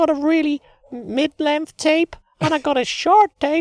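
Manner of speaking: loud, very high, squeaky voice. Coached to go squeakier, the speaker keeps going in a squeaky voice. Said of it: "You do a really good squeaky voice".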